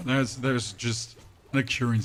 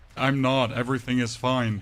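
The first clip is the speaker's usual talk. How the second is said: normal talking voice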